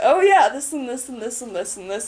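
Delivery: normal talking voice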